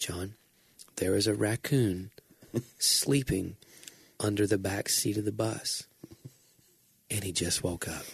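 steady, even, calm, hushed half-whisper. Retelling how a friend leaned in with bad news: imitating a calm half-whisper. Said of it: "he whispers it so calmly".

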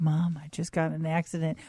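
soft, hushed, secretive half-whisper. Retelling a scam call from a fake son: imitating a scammer half-whispering. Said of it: "somebody in a whisper".

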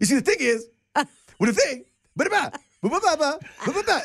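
very high, rhythmic babbling cadence. Picturing meeting the comedian and doing an impression of him: Kevin Hart impression. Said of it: "you talk like this".

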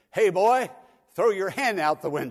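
loud, high-pitched shouting.

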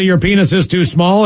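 ordinary talk

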